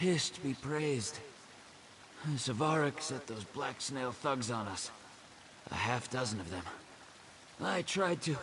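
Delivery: very high, panting, winded, out-of-breath delivery. Reporting an attack by half a dozen thugs, out of breath. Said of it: "Let me catch my breath".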